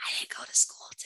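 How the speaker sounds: put-on hushed little-kid whisper. Retelling a five-year-old's phone call, imitating a child whispering. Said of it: "And she'd whisper".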